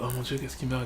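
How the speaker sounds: mock-solemn tone. Mimicking how a character talks in a film being discussed: mock-solemn. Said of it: "t'es solennel quoi".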